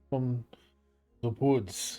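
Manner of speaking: touch of disdain, slightly distasteful. Voicing a follower of Helm greeting a player: with a little distaste. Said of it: "they say it with a little distaste in their mouth".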